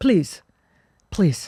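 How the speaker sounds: mock, scornful, disdainful tone. Recalling his dad answering a homeless person asking for a dollar, mock-disdainful. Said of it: "Like the disdain".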